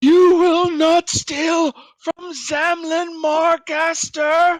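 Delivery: slow, drawn-out, very high woman's yell. Voicing a woman on a roof who yells at the players: yelling woman's voice. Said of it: "she yells out".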